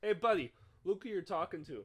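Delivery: loud, yelled screaming voice. Retelling a driver at a stoplight yelling from his window, retelling someone screaming. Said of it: "he's like started screaming".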